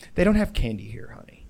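smug, condescending, talking-down voice, rattled off. Retelling what a Peloton mom said to her own kid, in a mock-smug voice. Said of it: "her mom like very smugly".

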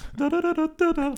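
high, loud da-da tin whistle imitation. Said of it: "I can't do it like the tin whistle".

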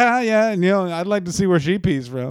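put-on classic old radio announcer voice. Describing a classic radio guy, then imitating him: Rob Bartlett impression. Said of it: "going back to Dylan's original impression".

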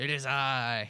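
loud, slow, gloating villain voice.

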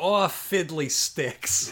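mob henchman, mobster goon voice. Retelling a movie scene where the goon Junk reacts: imitating Junk. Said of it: "Junk goes".

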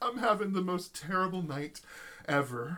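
put-on sulky, high-pitched, pouty whine. Retelling what a stranger in an elevator said: imitating someone pouting. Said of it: "she just turns on the pout".

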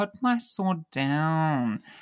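whiny, very slow, swooping, stretched out downward. Recapping an episode moment with Gamble and the sword, whiny Kyla impression. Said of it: "in a sort of whiny accent".

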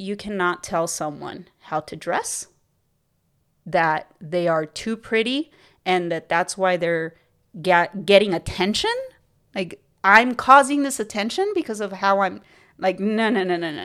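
ordinary delivery

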